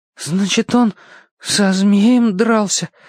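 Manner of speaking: trembling, shaky, still-quivering voice. A narrator reads a girl character's question, still in a trembling voice. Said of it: "спросила Алешка все еще дрожащим голосом".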